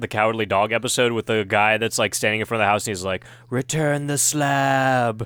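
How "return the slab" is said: creepy slithery half-whisper, slab drawn out. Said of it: "that slithery, like, succubus thing".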